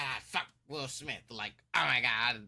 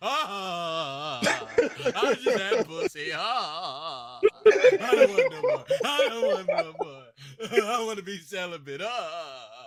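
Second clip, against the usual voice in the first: mock very loud sobbing, high swooping wail, drawn-out ahs; 8 semitones higher, 9 dB louder than usual. Imitating a man who had too much sex, mock crying like the Cowardly Lion. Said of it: "he's crying like the cowardly lion".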